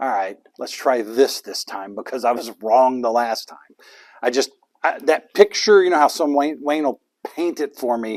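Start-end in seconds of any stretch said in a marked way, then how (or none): 0.0-3.6 smug, lowered voice. Picturing Satan walking away from God after their talk: smug Satan voice. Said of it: "he's walking away smug going".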